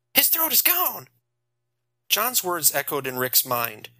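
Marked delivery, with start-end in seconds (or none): 0.2-1.1 in a panic, higher pitch. Reading a story aloud, a character finds a body's throat gone: panicking. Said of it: "He was panicking".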